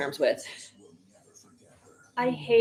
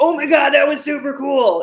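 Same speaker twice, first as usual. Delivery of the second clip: loud, high-pitched, excited buddy voice. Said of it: "watching with your buddy who's like".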